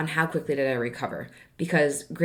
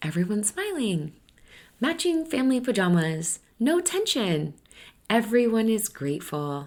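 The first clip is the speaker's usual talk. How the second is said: phony, put-on, pitched-up voice; 5 semitones higher than usual. Stepmom describing the imagined picture of perfect family peace, in a fake voice. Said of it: "Do you hear like how fake my voice sounds?".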